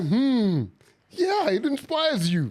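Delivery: put-on very slow sarcastic drawl, high and swooping. Imitating another speaker's earlier agreement: imitating a sarcastic reply. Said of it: "You were like".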